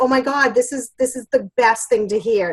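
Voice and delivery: ordinary talk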